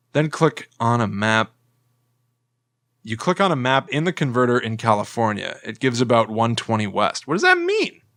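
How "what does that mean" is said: squeaky voice shooting way up, super high-pitched. Puzzling over map coordinates, confused: super high-pitched voice. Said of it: "my voice was going, like, super high pitch".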